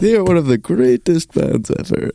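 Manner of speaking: very strong, high-pitched put-on Italian accent. Quoting a man who had the speaker stand before the class, strong italian accent. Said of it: "Please don't do accents on my show".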